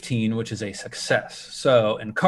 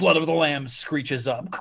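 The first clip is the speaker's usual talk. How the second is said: ordinary delivery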